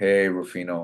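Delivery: put-on sad voice. Retelling the agent's phone call about the role: imitating agent's sad voice. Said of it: "your voice is already sad".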